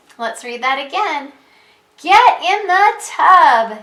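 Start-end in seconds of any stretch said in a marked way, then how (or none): 2.0-3.7 very excited, loud, swooping, very slow delivery. Reading a story aloud and repeating the vet's exclaimed line: very excited. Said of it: "say it in a very excited way".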